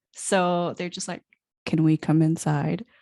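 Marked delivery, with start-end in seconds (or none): 1.7-2.8 raised, dead flat monotone with no inflection. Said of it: "they speak in monotone voices".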